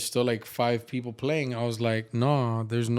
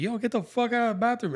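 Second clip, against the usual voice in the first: very high, shrill screaming yell; 11 semitones higher than usual. Retelling screaming during a poker night at home: retelling own scream. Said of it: "So when I screamed".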